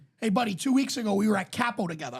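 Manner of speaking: plain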